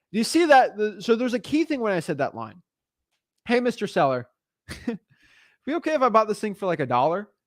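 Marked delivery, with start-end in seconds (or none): 3.4-7.2 play-acted light kidding tone with a laugh. Showing how to make a lowball offer to a seller: laughing jokingly. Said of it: "I sort of did that in a joking mannerism".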